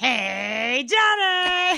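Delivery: put-on very loud, high, hollering old-woman voice. Doing a bit with a co-worker, greeting johnny in an old lady voice. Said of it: "I do it like an old lady now".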